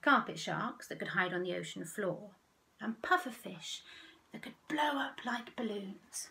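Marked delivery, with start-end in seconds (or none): none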